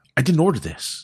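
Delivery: irate, high-pitched, loud angry yelling. Retelling how a customer at a counter yelled at staff: imitating a man yelling. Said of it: "he's screaming and yelling at the staff".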